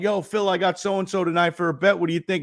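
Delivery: acted casual heckler calling out, light and high. Retelling a fan calling out to a golfer: imitating someone yelling. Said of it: "One dude screamed out".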